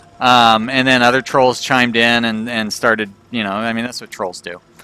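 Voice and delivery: plain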